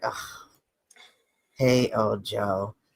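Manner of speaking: hushed, low, deflated and disappointed. Greeting someone who has just turned up, in a disappointed tone. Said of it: "You sound disappointed that I'm here".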